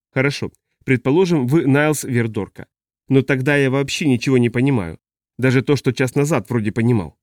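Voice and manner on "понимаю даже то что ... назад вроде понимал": ordinary delivery, nothing marked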